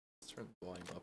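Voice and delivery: soft, hushed, quiet talk. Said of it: "I'm trying to be quiet".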